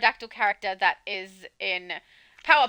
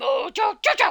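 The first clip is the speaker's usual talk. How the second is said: very high put-on voice, in character; 8 semitones higher, 3 dB louder than usual. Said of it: "Maybe just for his name, I can do".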